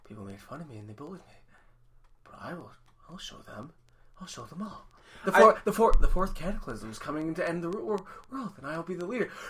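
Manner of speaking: mock flat deadpan delivery. Praising Neil Casey's humor, the speaker does a deadpan Neil Casey impression. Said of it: "Like the whole deadpan humor thing".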